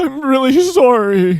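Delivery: very high, quivering, tearful crying voice. Demonstrating the crying quiver the other speaker just did, quivering crying voice. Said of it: "he just did the quiver again. Like".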